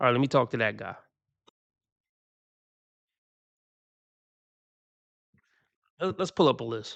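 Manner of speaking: slow, unhurried, drawn-out, dragging delivery. A host talking to viewers while pulling up a list, talking slow. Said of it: "I know I'm moving slow, talking slow".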